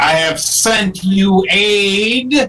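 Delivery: loud booming delivery, heavy stress on aid. Booming out a message in Draconic, heavy stress on aid. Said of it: "Putting a lot of emphasis on aid".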